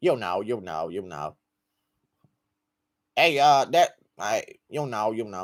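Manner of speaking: halting, stumbling voice with fillers and repeated phrases. Doing a requested impression of a fighter: Kevin Lee impression. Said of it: "Kevin Lee impression".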